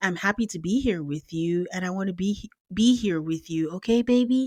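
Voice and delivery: voiced half-whisper, kept hushed, stage whisper. Recapping a show, the speaker quotes a man apologizing to a woman, retelling a half-whisper. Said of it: "And then he whispers".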